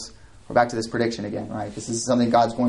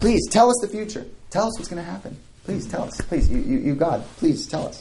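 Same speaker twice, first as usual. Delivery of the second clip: high, mocking, sarcastic pleading tone. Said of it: "holy sarcasm here".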